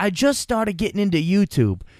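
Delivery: put-on Brooklyn accent. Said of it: "he talks with, like, a Brooklyn accent".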